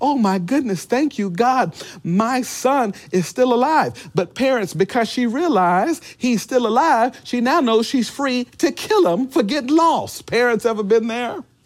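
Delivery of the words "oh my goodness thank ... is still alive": excited, relieved outburst, bursting with excitement. Acting out Mary finding her lost son alive: imitating Mary's excitement. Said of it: "she's just excited".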